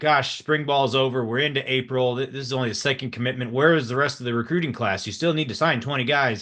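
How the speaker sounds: ordinary delivery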